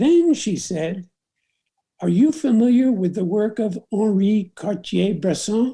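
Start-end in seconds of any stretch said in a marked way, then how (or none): 2.0-5.7 nicely done, put-on French accent. Retelling a woman's question about his camera: imitating a French accent. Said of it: "With a very nice French accent".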